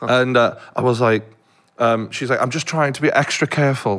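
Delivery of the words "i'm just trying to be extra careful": put-on posh old woman voice. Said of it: "she's very, like, you know, posh".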